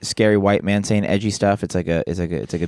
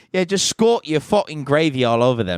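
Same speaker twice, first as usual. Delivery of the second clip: higher-pitched put-on English accent; 6 semitones higher than usual. Joking about English stereotypes with another speaker, different put-on English accent. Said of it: "Now I'm getting into a different English accent".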